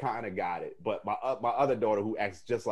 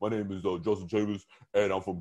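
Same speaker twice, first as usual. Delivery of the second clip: forced, strained put-on deep voice; 2 semitones lower than usual. Retelling how she tried to make her voice deep: put-on deep voice. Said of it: "she tried to get her voice like deep".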